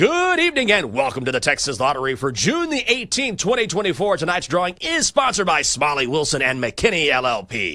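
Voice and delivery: way over-the-top, booming, swooping announcer voice. Retelling an audition where the director asked for way over the top: imitating his own over-the-top lottery announcer read. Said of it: "I want you just to go nuts here, like, way over the top".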